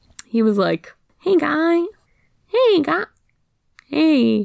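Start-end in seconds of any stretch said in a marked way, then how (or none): 1.2-4.5 high, drawn-out, laid-back cartoon cool guy voice. Recalling a character whose voice was changed, the speaker imitates how he sounded. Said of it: "Is this the new voice or the old voice?".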